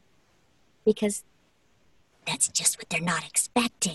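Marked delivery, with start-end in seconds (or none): 2.3-4.0 soft, high-pitched whispery voice. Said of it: "a very high-pitched whispery one".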